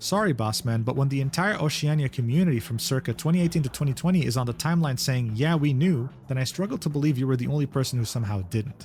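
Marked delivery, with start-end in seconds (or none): none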